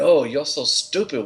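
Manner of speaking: put-on Japanese accent, high pitched. Joking about the Hasbro story, speaking in a put-on Japanese accent. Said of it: "If I could do the Japanese voice like Oscar".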